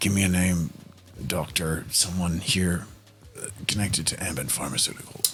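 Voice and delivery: muttering under breath. Asking Seb quietly for a name of someone here: said under the breath. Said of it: "under my breath, sort of say to Seb".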